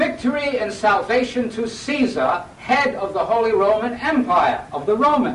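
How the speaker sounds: loud, high, slow, ceremonial proclaiming delivery.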